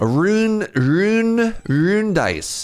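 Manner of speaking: awful, laid-on Scottish accent, very slow and high. Reading a game item name aloud, joking: put-on scottish accent. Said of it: "You gotta say it really Scottish".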